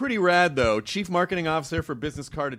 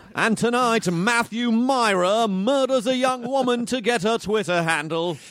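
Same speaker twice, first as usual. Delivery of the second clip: slow, higher English newscaster voice. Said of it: "you sound like a newscaster in England".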